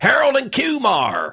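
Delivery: high, slow, mocking tone.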